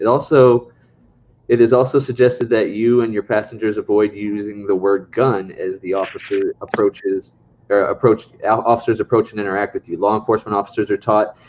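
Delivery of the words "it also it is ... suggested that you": usual speaking voice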